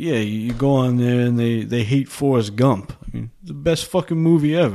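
put-on laid-on, silly New York accent. Retelling a movie scene where Ray Romano explains avoiding the internet: silly New York accent. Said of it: "in his, like, silly New York accents".

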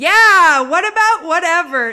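very loud talking.

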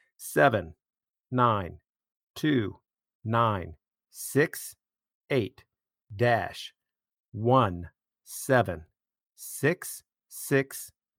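slow, deliberate, careful reading of each digit. Host giving listeners the league code, reading numbers slowly. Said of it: "I'm going to read them slowly".

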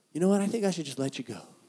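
quiet, soft, composed and calm voice. Telling how he let her go in a little calm voice: calm, Martha-ish voice. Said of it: "I did the little calm voice".

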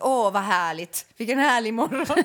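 put-on ironic, sarcastic delight. Imitating what the listener says in the morning when annoyed, mock-ironic remark. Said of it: "säger så här ironiskt".

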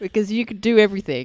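excited, incredulous mock voice, high and loud.

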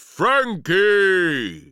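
booming, high-pitched giant plant creature voice. Reading a children's story, the giant plant creature calls to the boy: booming creature voice. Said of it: "It boomed".

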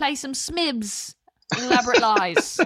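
put-on British accent. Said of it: "offended many people with a British accent".

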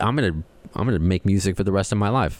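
ordinary talk

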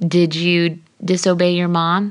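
plain

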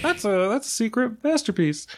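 high-pitched mocking impression. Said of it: "I'm not one of those people who says".

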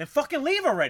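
play-acted furious yell, very loud and very high. Speaker retells reacting to a heckler at a wrestling show, retelling getting pissed off. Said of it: "Now I get pissed".

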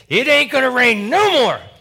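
very high-pitched, very loud yell. Retelling telling a man the rain will stop: imitating own past yell. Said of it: "I yelled at him".

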